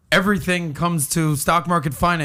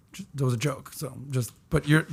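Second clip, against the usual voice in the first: ordinary delivery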